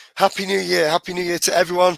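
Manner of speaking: hoarse, croaky voice. Host opening the first episode of the year, greeting everyone: croaky voice. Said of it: "for my croaky voice".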